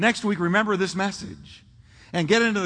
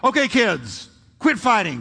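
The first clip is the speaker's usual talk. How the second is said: raised, swooping, authoritative voice. A parent retells telling the kids off while driving: retelling a raised voice. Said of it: "don't raise your voice".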